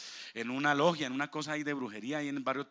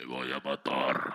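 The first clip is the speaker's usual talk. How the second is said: very deep, low, slow put-on man's voice; 13 semitones lower than usual. Retelling what a possessed woman said while being prayed for: imitating a man's voice. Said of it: "en voz de hombre".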